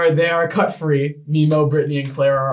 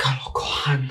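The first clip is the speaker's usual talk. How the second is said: quiet mutter under breath, quieter; 6 dB quieter than usual. Voicing a father reacting to a healing spell: muttering under his breath. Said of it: "your father just under his breath".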